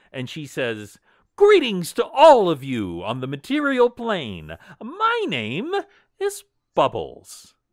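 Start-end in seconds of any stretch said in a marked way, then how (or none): 1.3-7.4 enthusiastic, animated, loud, swooping, eager tone. Game master voicing a character greeting the players: Bubbles, enthusiastic greeting. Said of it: "but in an enthusiastic way".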